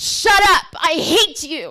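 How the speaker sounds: very loud, drawn-out, high-pitched yell. Retelling what a seven-year-old boy yelled in class: imitating a boy yelling. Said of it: "he would be yelling".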